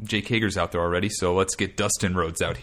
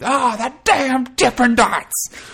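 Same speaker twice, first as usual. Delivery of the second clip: very high, loud, ringside commentator-style scream; 8 dB louder than usual. Recapping Dustin and Jake Hager brawling, the speaker is imitating JR screaming. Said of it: "JR starts screaming".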